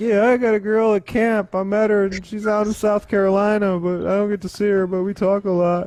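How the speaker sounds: put-on dorky nerd kid voice. Teasing someone who claims ladies in other states, imitating a junior-high nerd. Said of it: "sound like the nerd back in like fucking junior high".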